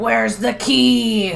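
gruff, rough, salty pirate voice, key drawn out. Recapping a scene, quoting a guy demanding a key: pirate voice. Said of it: "It sounds like a pirate".

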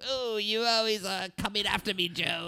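angry cartoon villain voice pushed up very high. Imitating the villain from a show seen as a child: Cobra Commander voice. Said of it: "That's a good Cobra Commander".

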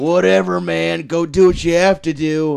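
talking like a total bro, easygoing. Describing a character on Inhumans, quoting him in a bro voice. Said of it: "he talks like a bro the whole time".

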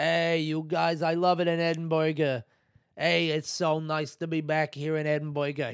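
put-on American accent. Retelling a stand-up comedian's bit greeting the Edinburgh crowd, American accent. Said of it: "he was doing an American accent".

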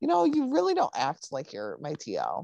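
put-on cheeky, sassy, sing-song delivery. Retelling a TV scene where the officer answers back: imitating a sassy comeback. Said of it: "Nolan comes back sassy".

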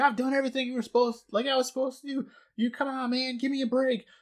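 mock, very high, sobbing, crying wail. Recapping a scene, acting out a man's words, retelling a crying scream. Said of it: "like screaming".

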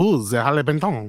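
put-on Frenchman voice with French accent. Recording takes of a product name in different voices, doing the Frenchman. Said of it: "The Frenchman".

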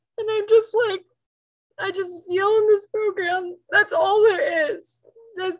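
speaking through tears, very high voice. Speaking about a sponsor who passed away, crying. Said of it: "i'm sorry i didn't mean to cry".

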